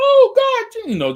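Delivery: very high, loud, shocked scream. Retelling her teacher's reaction in class: imitating the teacher screaming. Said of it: "she's screaming".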